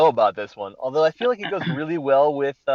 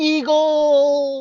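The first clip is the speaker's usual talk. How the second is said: very high, shrill, drawn-out yell; 13 semitones higher, 3 dB louder than usual. Picturing a leaping giant imitating JD from Scrubs: JD from Scrubs yelling Eagle. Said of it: "J D from Scrubs".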